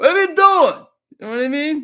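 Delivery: very loud, high New York accent. Reading a post to his audience, in a little New York accent. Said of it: "little New York accent here".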